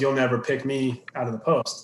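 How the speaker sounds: ordinary delivery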